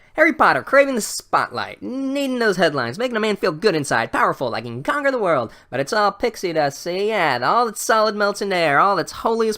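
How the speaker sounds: put-on old-time mobster voice. Retelling a man who just keeps going, in a 1930s gangster voice. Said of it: "he talks like some gangster from the thirties".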